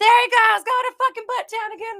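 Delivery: shrill, very high, loud, fired-up shout. Retelling yelling at the TV while listening: imitating own yelling. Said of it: "yelling at the T V".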